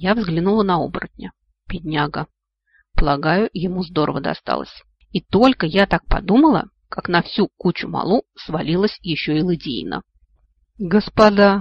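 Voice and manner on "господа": groaning. Narrator reads the werewolf king, crushed under a heap of people, groaning. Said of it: "простонал король оборотней".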